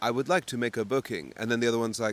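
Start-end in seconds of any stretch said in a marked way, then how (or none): 0.0-1.3 very computer-like robotic voice. Retelling two AI agents booking a call: imitating computer speak. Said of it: "it's like very computer speak".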